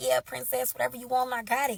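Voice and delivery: ordinary talk, nothing marked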